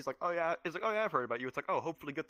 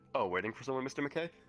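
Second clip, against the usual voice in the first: ordinary talk, nothing marked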